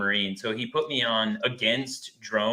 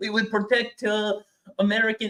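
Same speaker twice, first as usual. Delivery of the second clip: put-on Iraqi Arabic accent; 10 semitones higher than usual. Retelling a classmate's debate argument in class: imitating an Iraqi Arabic accent. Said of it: "Arabic accent, you know, like, an accent from Iraq".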